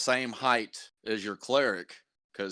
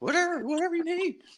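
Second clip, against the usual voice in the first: very high, cringing, cowering goblin voice. Voicing a captured goblin who begs the players not to kill him: cowering, begging goblin. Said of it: "cowering and everything".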